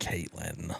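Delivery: irritated, annoyed inflection, very quiet. Showing how they say the name when annoyed, annoyed inflection on caitlin. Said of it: "a little bit of inflection when I'm annoyed at you".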